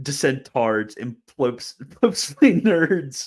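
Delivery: slow, high, laughing delivery. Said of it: "I can't get through this without laughing".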